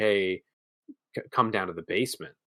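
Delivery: mock whisper, imitated whispering. Retelling a movie where a voice calls a boy downstairs: imitating a whisper. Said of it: "the voice starts to whisper to Kevin".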